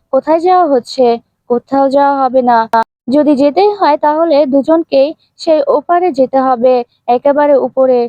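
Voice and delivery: plain reading voice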